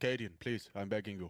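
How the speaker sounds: attempted put-on Danish accent. Pleading with Cadian, attempting a Danish accent. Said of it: "I was trying to do Danish".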